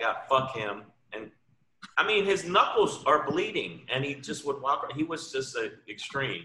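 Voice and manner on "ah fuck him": put-on furious angry outburst. Retelling how a comic punched pictures on the wall: imitating an angry outburst. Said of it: "'cause he's like".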